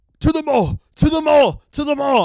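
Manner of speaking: shrill, high, insistent, repeated yelling. Retelling a security guard at the theater entrance: imitating a guard yelling. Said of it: "the security guard here yelling".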